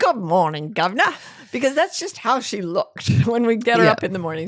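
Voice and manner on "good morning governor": put-on mock Cockney accent. Voicing what she would say each morning if she could speak, Cockney accent. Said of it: "she spoke in a Cockney accent".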